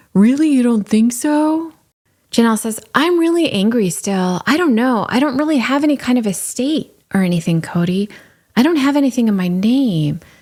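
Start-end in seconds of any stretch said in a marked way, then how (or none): 0.2-1.8 fake cool churchy voice, pitched up high. Recounting a conversation, the speaker quotes Cody's reply in his fake cool church voice. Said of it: "in his fake cool church voice".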